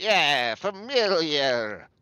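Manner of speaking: goat-headed beast creature voice. Storyteller voices the goat chiming in after the others speak: goat voice. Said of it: "And then the goat says".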